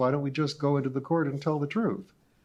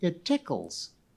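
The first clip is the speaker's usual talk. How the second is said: put-on childlike voice; 3 semitones higher than usual. Reading a story aloud, voicing the creature Lummox answering: childish voice. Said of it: "the childish voice answered".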